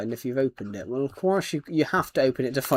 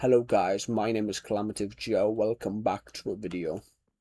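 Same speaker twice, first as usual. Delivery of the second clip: voice dropped far deeper, low and deep; 4 semitones lower, 4 dB quieter than usual. Showing viewers how the voice sounded this morning: much deeper voice. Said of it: "It sounded a bit more like this".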